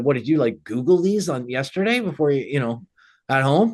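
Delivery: sweet on the surface, sarcastic underneath. Retelling own past remark to someone, imitating own sarcastic remark. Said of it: "but sarcastically, I said".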